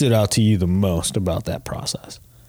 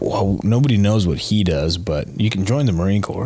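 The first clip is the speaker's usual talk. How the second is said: normal talking voice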